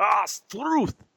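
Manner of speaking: high-pitched Scottish-sounding accent. Giving a slang lesson and repeating the word: Scottish-sounding accent. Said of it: "You're sounding Scottish there".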